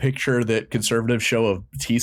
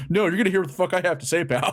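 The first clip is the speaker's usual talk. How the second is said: high-pitched, combative, bossy, scolding voice; 7 semitones higher than usual. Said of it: "And Dana's like".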